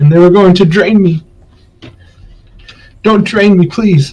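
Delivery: put-on high, terrified, pleading old woman voice. Voicing a scared old lady begging the players: scared, pleading old lady. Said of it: "like a whip animal that's, like, scared".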